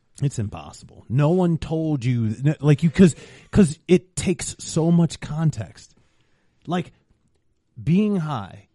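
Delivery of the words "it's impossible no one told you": ordinary talk, nothing marked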